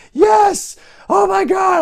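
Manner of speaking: put-on very high, loud, ecstatic shouting, teen fan voice.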